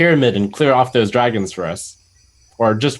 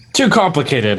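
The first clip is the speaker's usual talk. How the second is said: talking through a laugh, laughing through the words; 3 semitones higher than usual. Playing a character in a role-play, reaching out to a stranger, laughing while speaking. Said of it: "I say as I laugh".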